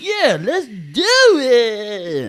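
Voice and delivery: very slow, drawn-out, loud, high buddy voice. Retelling a phone call, imitating a friend's voice. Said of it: "That's what he sound like to me".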